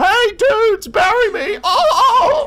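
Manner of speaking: high, loud surfer-dude voice, stretched oh. Playing a game, then imitating a surfer fish: surfer fish from SpongeBob voice. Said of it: "Sound like that surfer fish from SpongeBob".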